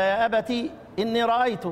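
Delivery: ordinary talk, nothing marked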